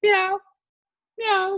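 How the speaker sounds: very high, loud, squealing cat meow. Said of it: "he'd just be".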